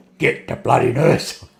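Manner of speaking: put-on irritated, fed-up, slow, rough, grumpy voice. Retelling telling a brother to fetch the nurse: retelling a grumpy order. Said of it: "I looked at him with a grumpy look".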